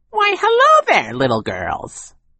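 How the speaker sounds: ridiculously high, swooping, sing-song voice. Narrator reading Count Olaf greeting the little girls, Count Olaf's ridiculously high voice. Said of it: "Count Olaf said in a ridiculously high voice".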